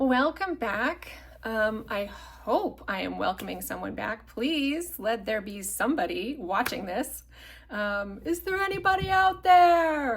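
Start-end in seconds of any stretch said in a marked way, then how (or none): 8.2-10.2 shrill, booming, loud, high calling-out shout. Host welcoming viewers back, doing a sailor calling out impression. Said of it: "that was my impression of uh, the sailor guy in the Titanic".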